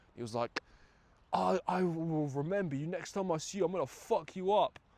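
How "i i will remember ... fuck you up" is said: high, enraged, heated, furious voice. Retelling the driver's threat after getting more annoyed: imitating an angry threat. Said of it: "this pissed him off even more".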